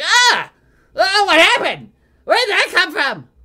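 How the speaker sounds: very high, very loud, startled goblin yelp. Voicing an armored goblin splattered with gore: startled goblin voice. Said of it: "armored goblin, who's just like".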